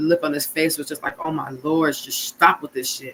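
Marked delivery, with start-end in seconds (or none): 1.2-3.1 imitated disgusted tone. Retelling how he reacted to a smile and wave: imitating disgust. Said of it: "his reaction was just pure disgust".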